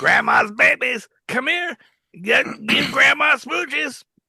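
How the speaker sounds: put-on very high, doting grandmother voice. Recalling a grandmother greeting the grandkids, doing Grandma Hart's voice. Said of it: "she talked like this".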